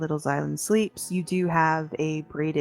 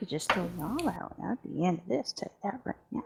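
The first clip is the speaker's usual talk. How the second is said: muttering in a small, high, reedy piping voice; 2 semitones higher, 8 dB quieter than usual. Voicing a character who sets down a tray and huffs out: muttering in a little reed piper voice. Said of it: "muttering in her little reed piper voice".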